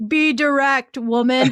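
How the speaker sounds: mock, dumb caveman voice. Retelling a husband's joke about being direct, in a caveman voice. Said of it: "he goes like a like a caveman voice".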